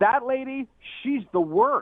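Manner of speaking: acted-out blurting at full volume, high-pitched. Retelling what she said about a TV cook, in a really loud voice. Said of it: "in a really loud voice".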